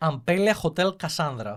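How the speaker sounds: loud Greek accent, name pronounced Greek way. Giving the name of a hotel, saying it with a greek accent. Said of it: "It's with the Greek accent".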